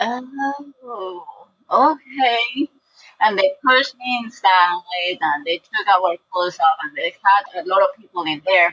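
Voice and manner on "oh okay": slow, unhurried, high, with "oh" stretched long. Recalling being pushed inside, the speaker repeats what they said: retelling a slow reply. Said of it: "With that same tone of voice, you know, that slow".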